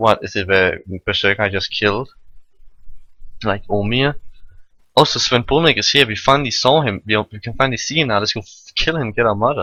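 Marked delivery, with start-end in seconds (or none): none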